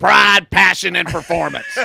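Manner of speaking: acted screaming. Telling how you used to scream these words at the house, reenacting a scream. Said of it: "I'd just scream it".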